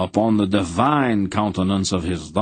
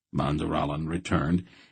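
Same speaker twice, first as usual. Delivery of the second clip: ordinary delivery, nothing marked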